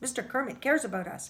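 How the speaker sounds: plain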